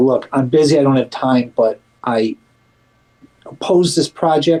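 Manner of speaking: ordinary talk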